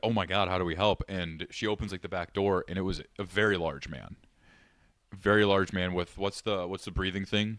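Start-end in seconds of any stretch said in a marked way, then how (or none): none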